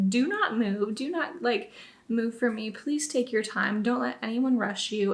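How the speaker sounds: usual speaking voice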